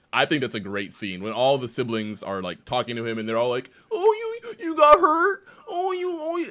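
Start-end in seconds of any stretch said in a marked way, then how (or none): 3.9-6.4 mock kitty voice, much higher, slower. Describing a TV scene where siblings talk to their hurt sibling, mocking kitty voice. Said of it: "they're just doing their stupid kitty voices".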